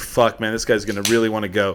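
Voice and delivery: ordinary talk, nothing marked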